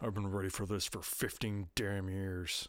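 mock mumbling, put-on muttering. Retelling what a man said, knowing he's the butt of the joke; retelling a mumble. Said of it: "he kind of mumbles out from under his beard".

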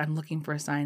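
plain

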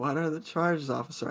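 needling, antagonizing tone, baiting on purpose. Retelling what they asked a police officer, in a mock-antagonizing tone. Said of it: "I kind of am saying it in a way where it's like antagonizing now".

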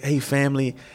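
LA-style voice. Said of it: "his L A voice".

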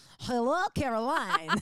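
loud, crazed, unhinged-sounding voice. Describing a man who finally speaks, the speaker imitates an insane voice. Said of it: "It's like some insane voice".

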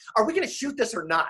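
put-on exasperated, impatient, fast delivery. Recounting a woman dressed as Bonnie Parker waiting on them, mock impatient, exasperated tone. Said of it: "in a very kind of impatient, exasperated tone says".

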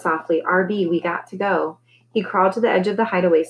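ordinary delivery

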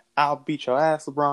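ordinary talk, nothing marked

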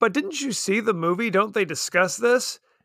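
ordinary delivery

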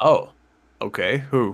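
deflated, let-down, disappointed little reply. Responding as the other speaker switches to underrated players, disappointed. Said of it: "Why do you sound so, disappointed".

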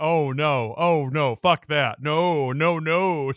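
put-on scared voice. Retelling how a friend's mom reacts while watching with them, mimicking a scared protest. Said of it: "She's like".

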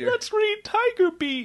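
put-on childish talk. Acting out an old man talking to his bottles: imitating childish talk. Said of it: "he's talking childishly".

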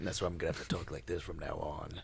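very quiet, low, hushed movie-trailer narrator voice. Speaker disguising his voice because others know it, in a generic movie trailer narrator voice. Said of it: "He sounds like the very generic movie trailer narrator".

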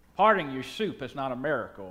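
deep, low, even delivery like a film voice. Quoting a movie line in the voice of Morgan Freeman. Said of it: "Picture it in the voice of Morgan Freeman as it is in the movie. I'll try my best".

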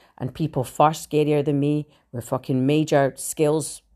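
plain

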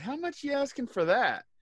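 mock hopeful tone, very high pitched. Retelling how another speaker asked a seller a price, imitating someone's hopeful asking tone. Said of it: "I could tell the tone of your voice".

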